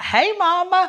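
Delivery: put-on Creole-accented speech. Retelling how her daughter greeted her from the bathtub, little Creole accent. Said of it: "in a little Creole accent".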